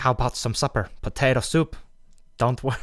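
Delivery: fake Norwegian accent drifting toward Ukrainian. Retelling a character's line: imitating a character with a Norwegian-sounding accent. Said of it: "turning Norway?".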